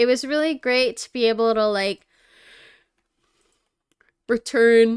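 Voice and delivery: talking through a yawn. Speaker telling listeners about returning somewhere, yawning while talking. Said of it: "Sorry, I'm yawning".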